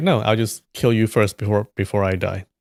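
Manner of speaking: normal talking voice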